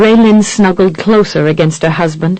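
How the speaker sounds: ordinary delivery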